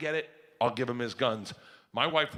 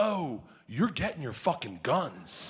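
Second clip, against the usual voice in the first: acted out, slow, completely serious, no joking. Retelling a gun clerk's reply: imitating a dead serious reply. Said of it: "he looks at me dead serious and he goes".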